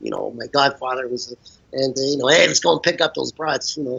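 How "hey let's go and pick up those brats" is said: put-on mobster gangster voice. Imitating how gangsters in mob stories talk, in a mobster gangster voice. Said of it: "gangster stories or mob stories. So they all talk like this".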